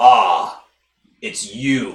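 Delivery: low voice of a talking bull. A game master voices a bull turning to face the player, talking bull voice. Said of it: "turns to face you and says".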